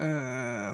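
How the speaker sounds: mock pained groan. Describing a sound, the speaker acts out someone with bubble guts: mock stomach-ache groan. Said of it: "like almost like you got bubble guts or something, and you're going".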